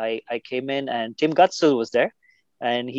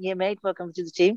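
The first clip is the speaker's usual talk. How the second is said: clumsy, bad Kiwi accent pitched higher than normal; 6 semitones higher than usual. Retelling how the captain welcomed you after you bowled to him, in a bad Tim Gutsell Kiwi accent. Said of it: "Tim's accent".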